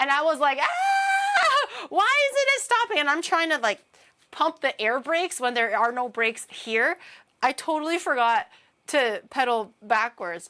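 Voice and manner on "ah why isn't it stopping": very high, drawn-out, panicked scream. Retelling a childhood bike ride that would not stop, the speaker re-enacts screaming for their life. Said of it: "I was like screaming for my life".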